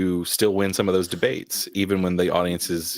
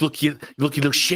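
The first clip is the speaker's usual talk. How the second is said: put-on Irish brogue, raised pitch; 8 semitones higher than usual. The speaker jokes about going into a debate and talking like Brick: Brick impression, Irish accent. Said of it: "start talking like this and be like".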